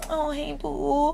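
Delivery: soft, dainty, prissy little put-on voice. Contrasting ways of calling someone over, in a little prissy voice. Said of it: "put on a little prissy voice".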